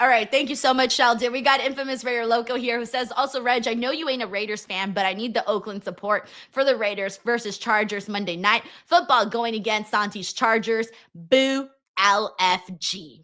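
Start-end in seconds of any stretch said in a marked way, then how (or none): none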